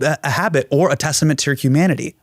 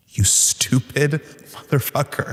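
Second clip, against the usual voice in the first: mock curt, snippy, snappy delivery; 3 dB quieter than usual. Retelling snapping at Alexa when it fails: imitating own snappy tone.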